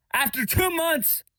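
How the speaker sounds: exasperated, high, swooping near-yell, frustrated. Complaining that a car repair at the shop still wasn't fixed: screaming in frustration. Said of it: "Sorry for screaming".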